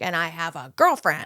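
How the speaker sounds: put-on, severe, very stern, firm, no-nonsense tone. Retelling what a man at the gym said: imitating a stern tone. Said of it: "a very stern".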